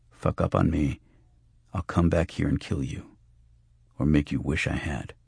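usual speaking voice

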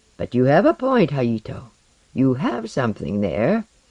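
ordinary talk

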